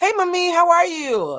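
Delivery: acted bright happy voice. Retelling calling a parent on the phone: imitating own happy greeting. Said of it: "'cause I'm just so happy to get through".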